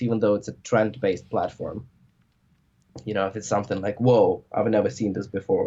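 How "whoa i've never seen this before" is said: usual speaking voice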